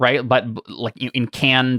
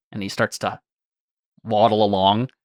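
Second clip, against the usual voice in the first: usual speaking voice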